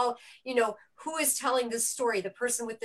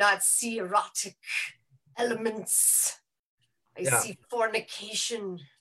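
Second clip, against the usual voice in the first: put-on German accent. Quoting a man whose German accent makes it better: imitating a German accent. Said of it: "his German accent makes it that much better".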